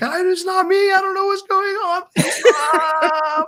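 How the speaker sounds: very high, shrill, shrieking scream. Narrating the game, the speaker voices the woman struck down by a sword, screaming. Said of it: "but just screaming like".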